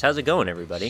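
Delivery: very chilled-out tone. Podcast host back after a week-long break greets everybody, super relaxed voice. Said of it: "with a super relaxed voice".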